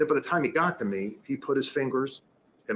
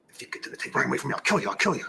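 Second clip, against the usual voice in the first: guttural, raspy, rough, menacing throaty voice. Recounting an encounter, imitating how a man spoke in a guttural, threatening voice. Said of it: "this guttural, threatening voice".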